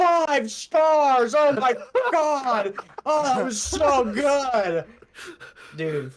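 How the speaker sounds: acted-out gushing rave, loud, high, excited shout. Retelling how a moviegoer clapped and yelled at the film's end, imitating a full-volume shout. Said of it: "and full volume".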